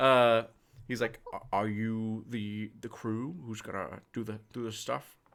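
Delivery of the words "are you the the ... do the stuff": soft, put-on guard voice. As the surprised guard coming over from the barracks back entrance, do a Sean Connery impression. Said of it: "Oh God, Sean Connery".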